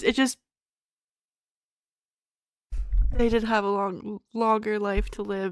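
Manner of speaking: speaking through tears. Reacting to a sad story with another speaker, crying. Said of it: "I'm fully crying right now".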